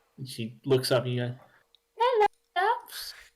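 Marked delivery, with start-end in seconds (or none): 2.0-3.1 very high, tiny gnomish woman voice. Narrating a campaign, the speaker voices a little gnomish woman at a desk: little gnome woman voice. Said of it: "it's a little gnomish woman".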